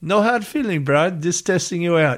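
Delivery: high-pitched Hawaiian pidgin accent.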